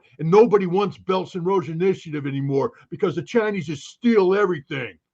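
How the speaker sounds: very bad put-on dumb American accent. Speaker mimicking someone's opinion, worst dumb American accent. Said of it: "I put in my worst dumb American accent when I did that".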